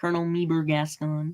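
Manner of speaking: put-on cartoon frog puppet character voice. Listing favourite characters, slipping into a Kermit voice. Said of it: "I'm doing my Kermit voice".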